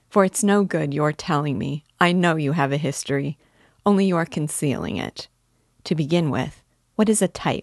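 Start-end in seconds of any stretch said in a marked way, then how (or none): none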